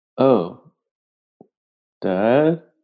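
appalled, revolted, shocked and disgusted. In a role-play game, Manolo reacts to his dad: shocked and disgusted. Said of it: "in a shocked and disgusted tone".

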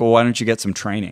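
put-on dismissive tone. Retelling what a man at a meeting asked, imitating a dismissive tone. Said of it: "he says very dismissively".

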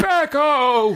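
shrieking, screeching. Acting out a mother turning to her son: shrieking the word Becco. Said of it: "unhinging her jaw, and just shrieking".

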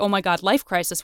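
ordinary talk, nothing marked

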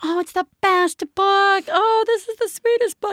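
high, gushing, praising tone. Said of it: "And everybody's like".

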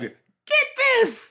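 put-on young British boy voice. Acting out a young M. Night Shyamalan as a British boy: imitating a young British boy. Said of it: "'Cause he was a young British boy".

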